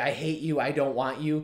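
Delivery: ordinary talk, nothing marked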